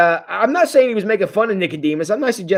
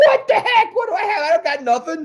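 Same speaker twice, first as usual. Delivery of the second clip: put-on panicked outburst, higher; 11 semitones higher than usual. Retelling a Bible story, acting out Philip's reply: imitating Philip freaking out. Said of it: "and just freak out".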